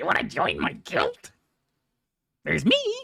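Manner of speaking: creaky, rough, high, raspy, swooping creature voice. Imitating how their own voice sounds on video playback: World of Warcraft goblin voice. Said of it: "I sound like the fucking goblin from fucking World of Warcraft".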